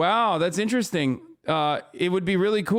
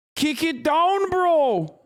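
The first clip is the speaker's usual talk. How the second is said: fake Canadian accent, high-pitched and slow; 10 semitones higher than usual. Repeating a line from a video in a fake Canuck accent. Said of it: "my fake Canuck. My, my Canuck accent".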